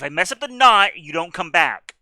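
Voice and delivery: very loud, stern, fatherly dad voice. Tying a rope around a player character: dad voice. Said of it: "I'll pull out the dad voice".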